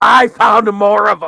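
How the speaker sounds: very high, shrill, loud, booming, maniacal gloating. Player answering Shanoa calling out for their character, maniacal edge to the voice. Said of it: "kind of maniacal edge to the voice".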